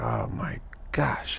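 soft, slow, exasperated whisper.

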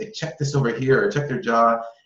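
discreet stage whisper. Retelling how Veronica pointed to something during a session: imitating Veronica half-whispering. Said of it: "very, like, whispering".

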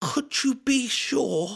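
tense, strained, very high and slow. Narrator voicing a man's question on a rooftop, in a strained voice. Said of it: "His voice was strained".

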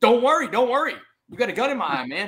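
high, full-throated scream at the top of lungs. Pinned down by a cop with a rifle, retelling his own scream. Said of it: "I scream back at him at the top of my lungs".

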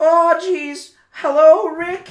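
squeaking, very high, very loud and slow. Reacting to a video, imitating how Morty would say the line: imitating Morty. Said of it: "Morty would be like".

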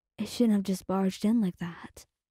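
ordinary delivery

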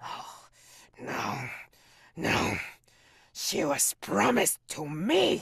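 weeping, screaming bellow, very loud, very slow, dragged out. Voicing a creature mourning the woman promised to him, crying while bellowing. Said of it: "and then he'll kind of like breathe and snort heavily in front of you. But then you realize, if you can see or you can sense, I think you realize he's crying while he's also bellowing and screaming".

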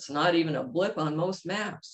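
plain reading voice

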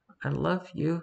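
put-on soft, small, timid, scared little child's voice. Retelling a childhood moment while she was yelling, in a small, timid kid voice. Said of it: "in that small, timid kid voice".

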